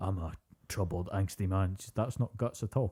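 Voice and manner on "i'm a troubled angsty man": put-on low, gravelly voice. Mocking a voice actor's performance: imitating a low, gravelly voice. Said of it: "he does his best sort of low, gravelly".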